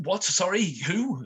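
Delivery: very high, flustered, barely restrained half-anger. Game master voicing a man whose room was just entered, half angry, keeping it together. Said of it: "So he's half angry, but half trying to keep it together".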